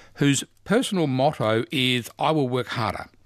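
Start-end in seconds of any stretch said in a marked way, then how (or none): none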